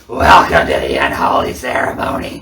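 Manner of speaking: put-on very low, deep, slow, drawn-out old lady smoker's voice. Imitating James Mitchell's wedding line, sounding like an old chain-smoking woman. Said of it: "He sounds like the eighty-year-old woman at the slot machine who's just chain smoking cigarettes".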